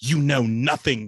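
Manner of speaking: booming fantasy-epic character voice. Retelling a woman's reply at a radio station tent: Game of Thrones voice. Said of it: "in that Game of Thrones voice".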